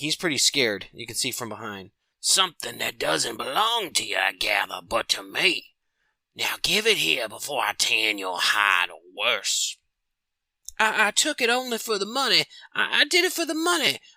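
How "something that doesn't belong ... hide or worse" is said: storybook swamp witch voice. Reading a comic aloud, voicing the swamp witch confronting a scared thief: swamp witch voice.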